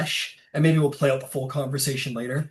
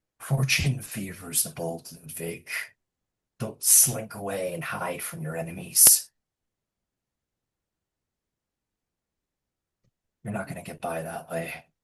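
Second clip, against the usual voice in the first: very low, hushed half-whisper; 8 semitones lower, 8 dB quieter than usual. Retelling what a man says while half-whispering in your ear, retold half-whisper in the ear. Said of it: "he like whispers in your ear".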